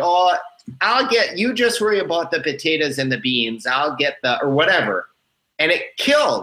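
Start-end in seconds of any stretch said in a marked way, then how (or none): 0.0-4.4 put-on North Dakota accent, higher. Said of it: "I was doing kind of like an accent".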